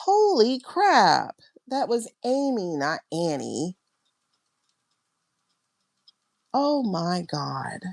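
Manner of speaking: tearful, overwhelmed, on the verge of tears. Realizing the name she heard was amy, not annie: getting tearful. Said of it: "I'm getting tears".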